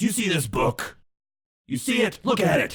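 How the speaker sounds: big, resounding, high voice. Narrator voicing a character showing the visitors a book: booming voice. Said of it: "this booming voice".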